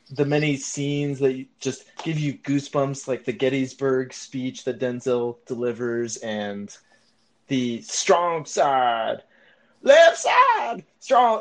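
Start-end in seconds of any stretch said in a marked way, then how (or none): 7.5-11.4 bad, loud, slow, swooping, booming delivery. Describing a favorite sports movie scene: bad Remember the Titans scene impression.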